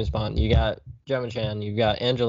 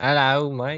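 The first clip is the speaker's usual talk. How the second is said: put-on Australian accent, higher; 4 semitones higher than usual. Trying a British accent for a greeting that slips into a bad Australian-ish accent. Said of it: "That was more Australian".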